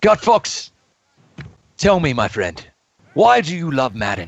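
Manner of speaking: sustained British accent in an interviewer style. Asking a guest why he loves Madden: BBC Hard Talk accent. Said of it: "stay with this B B C Hard Talk accent".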